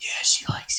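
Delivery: big orc voice in a confiding, whispered aside. Speaker retells a huge orc crouching to speak in their ear, retelling an orc's whisper. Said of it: "he like whispers in your ear and he's like".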